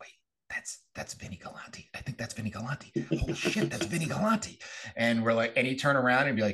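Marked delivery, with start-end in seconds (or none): 0.0-4.6 hushed, excited whispering. Retelling recognizing someone during a gym tour: imitating own past whisper.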